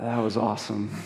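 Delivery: nervous, small, uneasy tone. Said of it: "sitting there, like, nervously".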